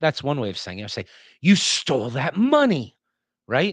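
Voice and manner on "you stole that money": horrified, appalled tone, raised and drawn out. Demonstrating how added punctuation changes a statement, tone of horror. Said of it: "in a particular tone of horror".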